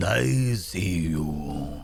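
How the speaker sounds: fake vampire voice, deep. Trying out accents for a Dracula voice, in a Nosferatu-style accent. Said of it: "a Nosferatu style accent".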